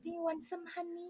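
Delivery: put-on tiny, very high, very soft hushed babytalk. Imitating a couple calling each other honey: baby voice. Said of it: "In the baby voice".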